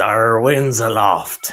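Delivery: talking like a pirate. Joking about a required phrasing for aviation rules: pirate voice. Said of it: "you have to say it like a pirate".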